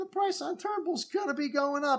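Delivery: voice suddenly going up.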